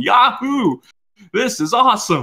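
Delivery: very high, slow, drawn-out excited whoop. Retelling how Dante acts in the trailer: imitating Dante screaming excitedly. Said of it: "he's screaming, going".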